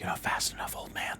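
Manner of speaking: very quiet, hushed, taunting whisper. Voicing a character who catches a thief's wrist: whisper. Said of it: "Doing the whisper thing".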